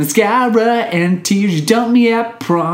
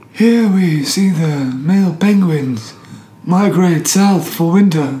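nature-documentary narrator voice; 3 semitones lower than usual. Asked to do an Attenborough impression, a David Attenborough impression. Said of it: "do an Attenborough impression".

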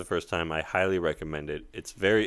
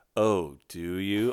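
mock-seductive, acted seductive voice. Retelling how a woman answered a man covered in powder, mock-seductive. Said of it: "All seductively".

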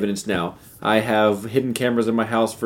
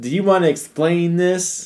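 play-acted confident, sassy, challenging tone, pitched up; 8 semitones higher than usual. Acting out her confronting him, asked to repeat: put-on confident, sassy tone. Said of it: "She's feeling confident and sassy".

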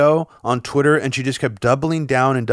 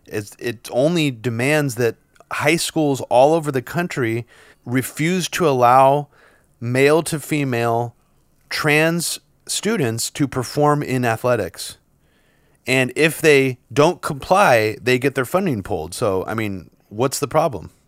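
usual speaking voice

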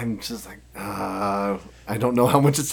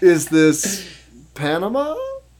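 insecure, unsure tone rising high at the end; 8 semitones higher, 6 dB louder than usual. Guessing a country on a map, unsure: voice rising high at the end. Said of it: "my voice is going high at the end".

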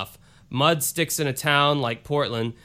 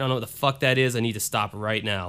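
plain

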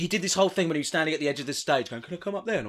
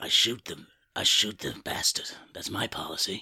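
menacing, breathed-out whisper; 9 semitones lower, 5 dB quieter than usual. Answering a request to do an impression: Clint Eastwood impression. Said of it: "do an impression of, uh, Clint Eastwood".

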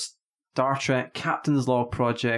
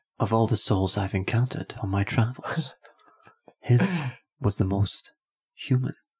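dramatic, theatrical starship captain voice; 2 semitones lower than usual. Taking a turn reading the line, the speaker does a Kirk impression. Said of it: "I'll read it like Kirk then".

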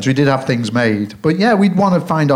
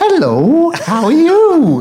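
very high, slow, drawn-out sing-song ventriloquist puppet voice; 13 semitones higher, 4 dB louder than usual. Speaker describes talking to a sock puppet on his hand: ventriloquist voice. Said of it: "I would put on my ventriloquist voice".

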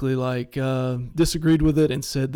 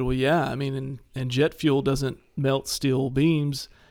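ordinary talk

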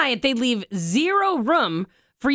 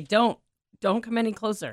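usual speaking voice

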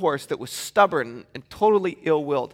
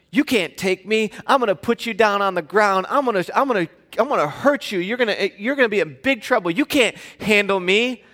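put-on young child's taunting voice, higher pitch; 3 semitones higher than usual. Retelling what a five-year-old says to the speaker, imitating a kid's trash talk. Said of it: "open up a can of trash talk".

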